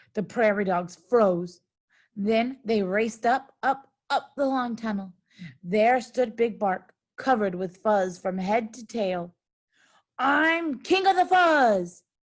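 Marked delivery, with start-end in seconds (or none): 10.2-12.0 snarled, growling, boastful tone. Reading a story aloud and voicing Big Bark, snarling Big Bark voice. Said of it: "he snarled".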